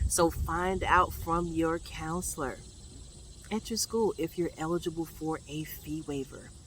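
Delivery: soft, quiet, hushed whisper. Speaker telling students to ask their school counselor about fee waivers, whispering. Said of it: "I'm whispering because".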